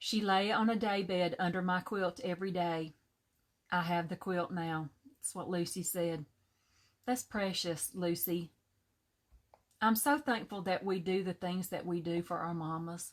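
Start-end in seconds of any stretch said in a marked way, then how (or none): 7.1-13.1 choked-up voice, cracking and breaking with emotion. Responding to a shared story about a mother's quilt, choked up. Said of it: "I'm getting choked up".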